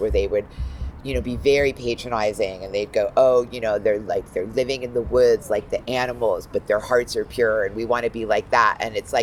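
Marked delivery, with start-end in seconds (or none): none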